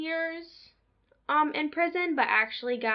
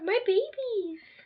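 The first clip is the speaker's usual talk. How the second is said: put-on doting grandma voice, pitched up; 9 semitones higher than usual. Imagining parents hearing the podcast and doting, in a put-on grandma voice. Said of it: "I was sounding more like a grandma".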